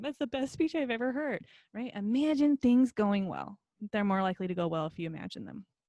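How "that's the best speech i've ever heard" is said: play-acted, tearful, sobbing speech, pitched up. Picturing a speech going well, speaking as if crying: mock crying while talking. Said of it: "I'm crying in the background going".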